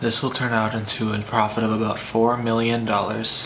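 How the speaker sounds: uninterested, no-energy, deadpan flat monotone. Giving an example of how things sound when said deadpan. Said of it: "say most things deadpan or in an uninterested tone".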